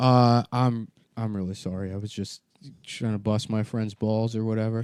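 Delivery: ordinary delivery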